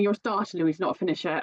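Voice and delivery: normal talking voice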